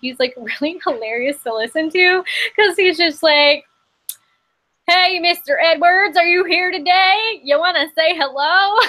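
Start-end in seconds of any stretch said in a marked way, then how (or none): 4.9-8.8 put-on broad, heavy Southern accent, pitched up. Quoting a guy she finds hilarious, in a thick southern accent. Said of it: "really thick Southern accent".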